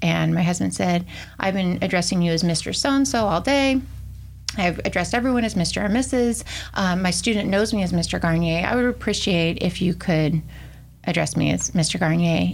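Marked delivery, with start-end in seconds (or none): none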